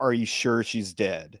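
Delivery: ordinary delivery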